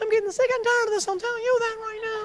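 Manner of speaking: very high fake yell. Speaker imitating a woman who can't really yell, imitating her pretend yell. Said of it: "when she gets mad and starts yelling".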